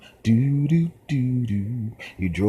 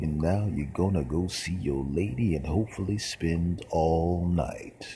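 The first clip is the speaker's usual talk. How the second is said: put-on silky, smooth late-night radio DJ voice, quieter; 3 semitones lower, 5 dB quieter than usual. Imitating a late-night Quiet Storm radio host: silky-voiced radio host. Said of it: "with the silky voice".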